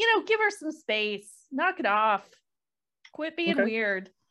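half-committed, mild yell. Voicing a character telling a crowd to give her space: yelling in character. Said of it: "Nick just kinda yells and says".

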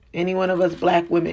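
plain

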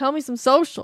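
very loud, high, full-force yell. Podcast co-host demands the social media plug from the other host, yelling. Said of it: "I'm going to yell at you now".

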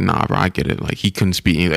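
plain

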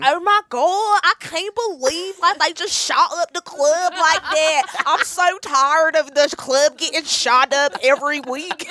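put-on strong, heavy, harsh Pittsburgh accent. Quoting the other promo girls after they leave the club, harsh Pittsburgh accent. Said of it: "they have these really harsh Pittsburgh accents".

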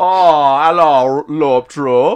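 attempted Austrian accent, high and loud.

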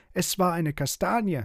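hot-tempered high cry. Narrator reads a pig accused in an argument, calling out angrily. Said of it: "rief Piggledy wütend".

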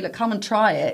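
normal talking voice

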